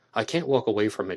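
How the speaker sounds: normal talking voice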